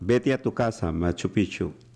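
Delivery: plain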